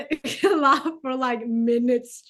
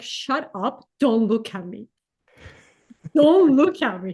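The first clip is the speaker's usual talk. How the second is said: mock talking through stifled giggles. Retelling what you told someone beside you, retelling stifling laughter. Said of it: "I'm trying to not die out of laughter".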